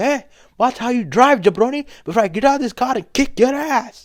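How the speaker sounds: acted, very high-pitched, crisp angry tone. Retelling a man yelling at another driver: imitating a crisp angry threat. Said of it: "He's like".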